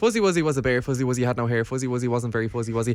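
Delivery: fast, quick-fire, rattled-off run of words. Saying a tongue twister again after being asked: fast. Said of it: "Now you have to do it fast".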